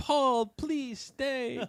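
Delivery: very high-pitched, loud shout. Recapping a game scene, retelling the character's yell as the car starts.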